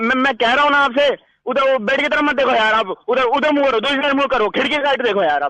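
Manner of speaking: high, panicked, frantic yelling.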